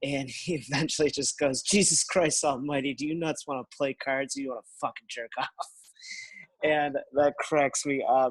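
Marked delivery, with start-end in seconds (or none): 1.6-5.5 put-on pissed-off, angry-sounding voice. Describing a film scene where McMurphy gets irritated at cards, imitating McMurphy's irritated outburst. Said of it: "he's like super pissed off and irritated".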